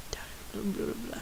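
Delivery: very soft, dismissive whispered blah blah.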